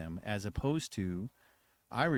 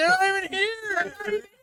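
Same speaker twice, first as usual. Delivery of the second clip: put-on high, slow, whiny kid voice.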